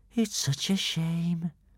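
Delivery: drawn-out, slow, toneless half-whisper. Narrator reading Kamikaze's remark as spectators watch the barrel go overboard, half-whispered. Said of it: "whispered Kamikaze".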